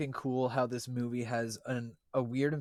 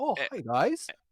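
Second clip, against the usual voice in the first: put-on French Canadian accent, pitched up; 7 semitones higher, 4 dB louder than usual. Imitating an actor's odd accent from the first scenes: Hugh Jackman's French Canadian accent. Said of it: "Hugh Jackman has, like, a French Canadian accent".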